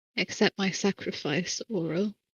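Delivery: soft whisper under the breath. A player's character, kneeling in the snow, addresses Aurel: whispering. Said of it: "I kneel down in the snow and I whisper".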